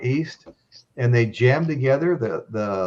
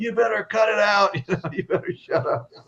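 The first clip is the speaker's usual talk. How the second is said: yell, pitched higher; 9 semitones higher than usual. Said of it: "they were all yelling at [name]".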